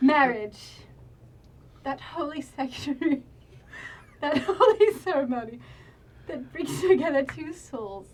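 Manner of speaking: talking through laughter. Officiating an in-game wedding, laughing while talking. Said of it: "Sorry, I can't stop laughing".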